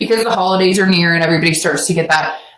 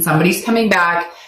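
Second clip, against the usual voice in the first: ordinary talk, nothing marked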